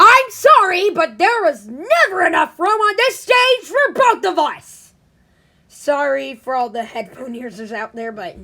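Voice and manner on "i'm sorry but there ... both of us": very loud, booming, high-pitched put-on character voice. Doing an impression of his voice, in a loud put-on character voice. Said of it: "I could do his voice pretty well. and I do it really loud too".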